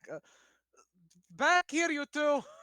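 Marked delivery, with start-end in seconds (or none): 1.3-2.4 very loud, very high shouting yell. Character calling out toward the back to two people, yelling to the back. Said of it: "I guess I should just yell out to the back".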